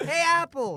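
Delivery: very high-pitched cartoon character voice. Friends ask for an annoying orange impression, Annoying Orange voice. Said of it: "Say some annoying orange".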